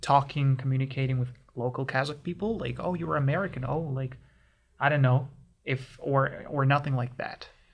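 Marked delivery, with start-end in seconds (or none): none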